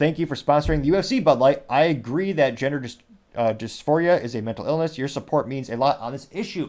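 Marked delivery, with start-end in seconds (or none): none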